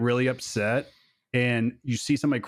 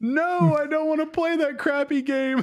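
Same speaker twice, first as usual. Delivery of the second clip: put-on kid voice yelling out, very high-pitched. Father retelling how his daughter reacted when he offered a different game, imitating her yell. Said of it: "She yelled out".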